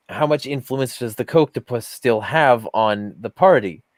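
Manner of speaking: ordinary talk, nothing marked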